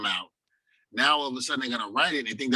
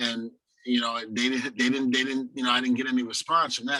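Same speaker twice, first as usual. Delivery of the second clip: normal talking voice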